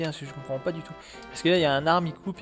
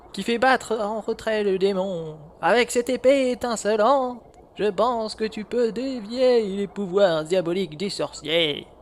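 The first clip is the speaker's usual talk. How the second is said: put-on old man voice, higher pitch, louder, slower; 5 semitones higher, 7 dB louder than usual. Voicing a character who speaks to Link: old man voice. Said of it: "Faut que je fasse une voix de vieux".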